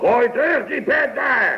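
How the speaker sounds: put-on bossy, very high, slow, commanding voice. Recounting ordering someone to throw back a cap, put-on commanding voice. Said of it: "dan ga ik even een stemmetje opzetten".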